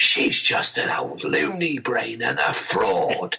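loud aside in a put-on child voice. Retelling a remark made during a quiet lull in a seance: imitating Helen's aside, loud enough to hear. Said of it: "In a voice just loud enough for everybody to hear".

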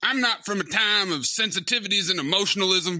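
put-on old-West cowboy accent. Voicing Roy, who was watching the whole time, in a Rooster Cogburn accent. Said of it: "I am not locked into this Rooster Cogburn".

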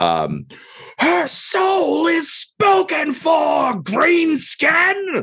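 shrieking petulantly. A player character taunts an enemy during combat, petulant shriek. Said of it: "I will like shriek in like a Joffrey didn't get his way amount of like petulance".

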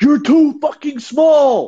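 very high-pitched, loud yell. Retelling how Luka yelled at an opponent: imitating Luka yelling. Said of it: "he just yelled at him".

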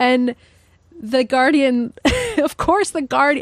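words broken up by laughing. Explaining how The Guardian handled a journalist's disclosure, laughing while talking. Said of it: "I'm laughing because this is so sad".

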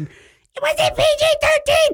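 drawn-out, very high-pitched, slow voice. Retelling a phone call from his wife about the movie rating: imitating wife's voice. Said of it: "a reasonable facsimile thereof of how, how she sounded".

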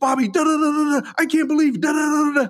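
very high, furious, angry nonstop ranting. Retelling an aunt scolding Uncle Bobby in a hotel room: imitating an aunt ranting angrily. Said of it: "she goes to town".

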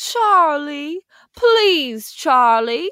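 put-on high, begging, pleading old-movie wife voice. Retelling the blonde second wife's line from the film: imitating her plea. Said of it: "and she's like".

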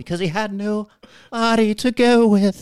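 very high, put-on spooky voice. Retelling a skeleton joke to Will: spooky Ted Cruz voice. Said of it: "How about a spooky Ted Cruz voice?".

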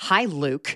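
mock-serious, fake solemn tone. Greeting the other speaker at the start of the show: mock-serious greeting. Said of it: "it's a very serious greeting".

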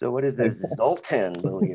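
play-acted, patronising, condescending stress on the name. Mimicking the other speaker's question: imitating a condescending tone on zoltan. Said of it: "emphasize his name with a condescending tone".

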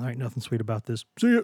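struggling, barely getting words out. Replying to a friend's compliment on their voice, barely getting words out. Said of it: "I can barely get words out right now".

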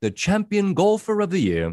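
high, wide-ranging British announcer accent.

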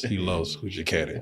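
awkward, sheepish, embarrassed tone. Retelling what an assistant said, imitating an embarrassed tone. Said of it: "Almost like that, like he was embarrassed".

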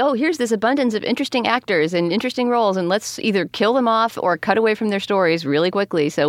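ordinary talk, nothing marked

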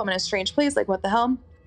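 normal talking voice

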